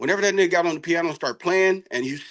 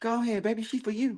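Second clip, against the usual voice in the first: a man's soft, high-pitched voice; 5 semitones higher, 8 dB quieter than usual. Retelling what a man said to him, imitating a high-pitched voice. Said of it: "his voice is high pitched".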